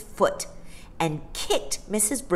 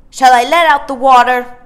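insolent and rude, very loud, pitched up; 7 semitones higher, 13 dB louder than usual. A boy in disgrace after his bath calls out in the rudest voice he had. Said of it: "he inquired in the rudest voice he had".

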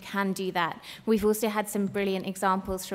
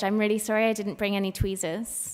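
normal talking voice

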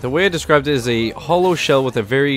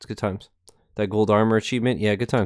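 ordinary delivery

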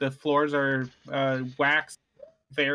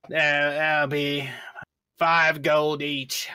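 put-on slightly drunk dwarf character voice. Game master voicing the dwarf owner naming the bath price, tipsy dwarf owner voice. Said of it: "there's a short dwarf male there, ... He seems a little tipsy for the day".

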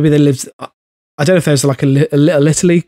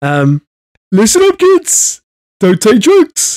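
put-on cartoon rat voice, slower; 6 semitones higher than usual. Asked to say a sentence as Roland Rat, doing a Roland Rat voice. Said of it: "say a sentence as Roland Rat".

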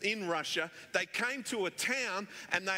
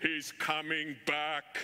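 put-on deep, huge voice with Russian accent; 4 semitones lower than usual. Retelling a preacher's sermon on the second coming, huge russian voice. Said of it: "he had a huge Russian voice".

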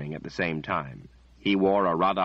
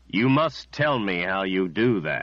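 full, strong, powerful delivery. Narrator reads a man in a chair speaking to Richard: deep, powerful voice. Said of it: "the man said in a deep, powerful voice".

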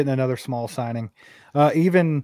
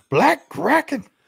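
very high-pitched stand-up comic voice; 11 semitones higher than usual. Saying a donor's name like Dave Chappelle: Dave Chappelle voice. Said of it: "I wanna say it like, uh, Dave Chappelle".

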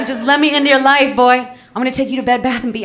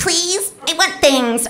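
put-on tiny, small, pleading little-girl voice; 4 semitones higher than usual. Describing young women who ask older rich men for things, in a tiny voice. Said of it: "Just use like a tiny voice".

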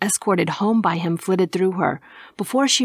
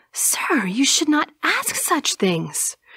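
affronted, offended gasp, pitched up; 7 semitones higher than usual. Narrating a woman answering a man's question, gasped with offense. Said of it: "she gasped with clear offense".

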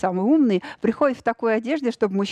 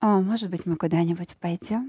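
lowered, deeper voice with dropped timbre; 3 semitones lower, 4 dB quieter than usual. Acting out what a woman says: lowered voice. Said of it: "Тембр пошел вниз".

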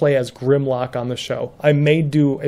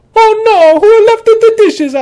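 very high, loud, shrill cartoon Italian accent; 9 dB louder than usual. Describing staying stuck in a character voice for weeks, in Mario voice. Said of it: "caught in the Mario voice".

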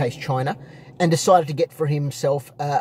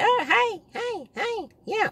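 put-on squeaky nasal woman's voice, much higher, slower; 3 dB quieter than usual. Imitating a woman from the car, in a high-pitched, nasal, squeaky voice. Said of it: "she's got a very high-pitched, nasally, squeaky voice".

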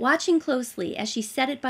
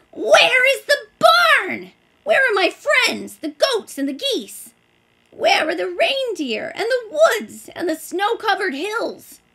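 very high, shrill shrieking cries; 10 semitones higher, 8 dB louder than usual. A tomten, dumped in a crate, looks out a window, shrieking. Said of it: "he began to shriek".

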